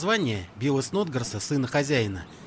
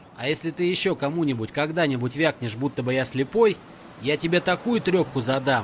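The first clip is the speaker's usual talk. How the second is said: ordinary delivery, nothing marked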